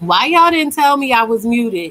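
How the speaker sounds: high-pitched yelling. Realizing they were muted on the call, asking the others, yelling. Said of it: "And now I'm yelling".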